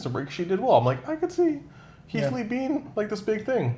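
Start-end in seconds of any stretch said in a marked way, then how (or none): 1.1-3.8 very high, doubtful, half-believing musing voice. Retelling an earlier thought of your own: imitating own doubtful high-pitched voice. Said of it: "it sounds like you don't believe yourself with a high-pitched voice".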